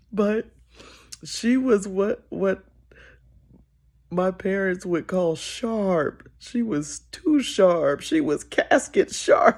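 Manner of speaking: trying not to laugh. Describing a church lady's outfit, trying not to laugh. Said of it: "I'm trying not to laugh".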